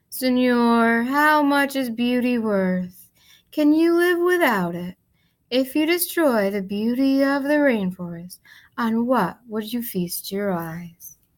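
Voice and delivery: unhurried, sloth-like, lazy, drawn-out drawl. Reading a story, she reaches a sleeping man and speaks to him; deep, lazy voice. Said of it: "She spoke in her deep, lazy voice".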